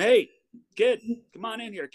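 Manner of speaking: put-on yell. Retelling calling a passing kid in for help: retelling own yell. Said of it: "so I yelled at him".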